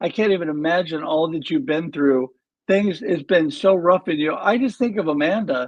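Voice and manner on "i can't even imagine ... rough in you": ordinary talk, nothing marked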